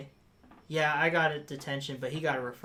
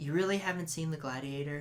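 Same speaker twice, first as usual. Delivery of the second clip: put-on motherly, disappointed, let-down voice; 5 dB quieter than usual. Retelling how a mother reacted to an unseen movie: imitating a disappointed mother. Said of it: "in the most motherly disappointment look".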